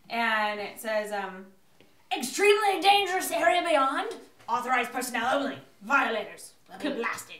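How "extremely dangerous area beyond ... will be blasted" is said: very loud, booming, mechanical announcer voice. Game master voices a clockwork guardian creature to the players: booming clockwork guardian voice. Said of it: "kind of a booming voice centered from this clockwork guardian creature, / kind of a booming voice centered from this clockwork guardian creature, / kind of a booming voice centered from this clockwork".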